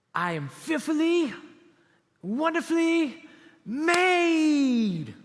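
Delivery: mock very slow, swooping child voice full of gusto. Retelling what a girl stood up and declared at the lunch table, imitating her gusto. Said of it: "she said it with all this gusto".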